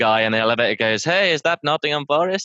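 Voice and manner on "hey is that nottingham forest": terrible put-on Mexican accent, pitched up. Speaker retells a Mexican man talking to him in an elevator, bad Mexican accent. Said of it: "Oh, that's a terrible accent".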